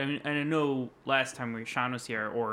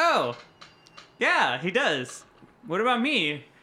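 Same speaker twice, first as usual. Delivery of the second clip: high, loud mock eager voice. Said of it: "I was like".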